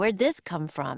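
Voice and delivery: ordinary delivery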